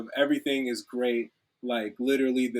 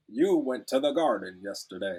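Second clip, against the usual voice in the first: robotic text-to-speech computer voice, lower pitch; 2 semitones lower than usual. Describing how old text editors read typed text aloud, in a robotic computer voice. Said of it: "sounds way more robotic".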